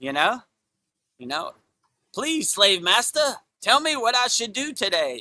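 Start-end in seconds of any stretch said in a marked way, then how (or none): 2.1-5.2 high, groveling, obedient, servile pleading tone. Mocking leaders as gophers: imitating a servile gopher. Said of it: "doing the master's bidding".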